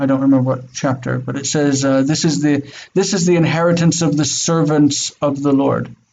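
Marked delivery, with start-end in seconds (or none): none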